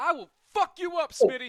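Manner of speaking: shrill, very high, full-blast yelling. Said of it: "I'm yelling way too loud".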